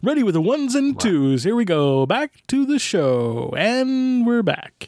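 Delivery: swooping announcer patter. Talking on the podcast, demonstrating a radio voice. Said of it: "accused of using a radio voice".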